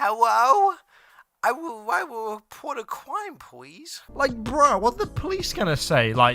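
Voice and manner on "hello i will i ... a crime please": put-on very slow, high child voice. Acting out how she would phone the police: imitating her childlike call. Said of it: "She would say it more like this".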